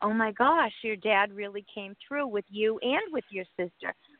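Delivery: ordinary delivery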